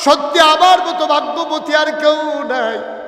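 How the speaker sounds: joyful shouting, high-pitched.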